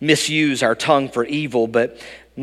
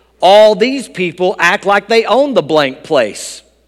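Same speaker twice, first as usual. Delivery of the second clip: loud, high-pitched, outspoken, carrying outburst; 6 semitones higher, 7 dB louder than usual. Telling a story, acting out what the pastor said: retelling a loud remark. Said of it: "with a rather loud voice".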